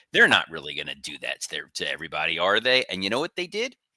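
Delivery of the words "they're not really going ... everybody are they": snide, obnoxious, sarcastic tone. Retelling an earlier guess about the pre-show: imitating own sarcastic obnoxious tone. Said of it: "I said it in the most sarcastically obnoxious".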